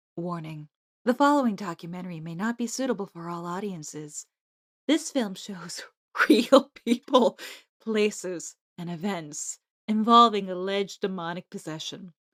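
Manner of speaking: low, hushed, soft, dramatic ASMR voice. Reading a documentary's content warning aloud, in a dramatic ASMR-like voice. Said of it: "Can I say it in my dramatic, like A S M R adjacent voice?".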